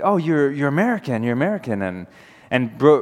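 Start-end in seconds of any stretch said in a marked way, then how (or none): 0.0-1.8 eager, excited man's halting broken English. Retelling what a man in a Tripoli alley said, imitating broken English. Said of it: "broken English".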